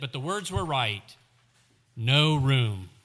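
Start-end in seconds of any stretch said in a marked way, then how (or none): 2.0-2.8 grudging, reluctant, much louder. Playing the innkeeper from a script, [name] finally answers Joseph, grudgingly. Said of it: "He said it grudgingly".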